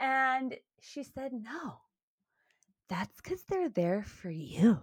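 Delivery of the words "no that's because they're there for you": put-on woman's voice. Quoting what Hannah said to him, done in a Hannah voice. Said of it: "Did I do a good Hannah voice?".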